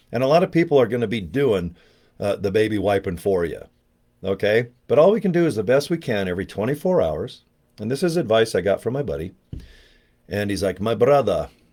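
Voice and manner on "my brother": imitated German accent. Retelling advice from a buddy from Germany: imitating a buddy's German accent. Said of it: "to do his accent, 'cause he's from Germany".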